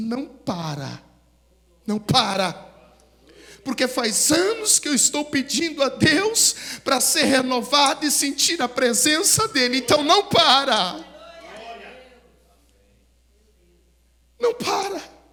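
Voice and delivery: loud, desperate begging plea. Retelling a woman who rushed forward begging the preacher: imitating a desperate plea. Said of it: "veio aqui na frente desesperada".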